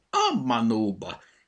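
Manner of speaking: crying out, exclaiming. Asked if he notices anything up in the tree, the elf Petya exclaims. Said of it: "Kiáltott fel".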